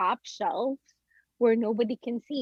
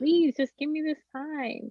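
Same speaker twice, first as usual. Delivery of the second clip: put-on tearful pleading voice; 4 semitones higher than usual. Retelling begging a son to nap: retelling a tearful plea. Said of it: "crying today".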